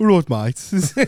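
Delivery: put-on Birmingham Brummie accent. Showing the accent used when visiting Birmingham, in a Birmingham accent. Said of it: "I do a Birmingham accent".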